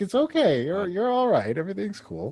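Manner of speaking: very high, suddenly motherly tone. Voicing a character comforting a flustered adventurer: motherly voice. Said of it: "she gets, like, really motherly with you".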